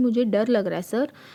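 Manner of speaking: ordinary delivery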